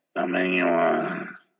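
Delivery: mock lifeless, distant, cold, flat, very low monotone. Retelling ordering fast food, the speaker imitates the order-taker's cold, distant voice. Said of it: "It was so cold and distant".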